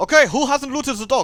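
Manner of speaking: put-on Eastern European accent. Imitating the raid leader shouting at the raid, in a terrible Eastern European accent. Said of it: "That's a terrible accent".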